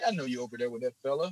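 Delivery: put-on deep bass voice. Retelling a story, the speaker quotes the guy willing to overlook it, doing a Mike Bass deep-voice impression. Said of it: "like the deep voice guy".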